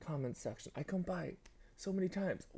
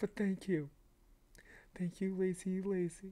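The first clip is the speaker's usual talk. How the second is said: crying while talking, tearful and choked up; 2 semitones higher than usual. Thanking a supportive person on camera, crying while talking. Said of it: "I can't even speak now".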